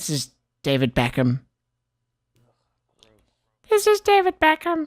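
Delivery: high, sing-song, lilting, swinging delivery. Pretending David Beckham is here to sign off the podcast, David Beckham impression. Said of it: "David Beckham's here".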